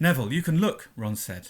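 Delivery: ordinary delivery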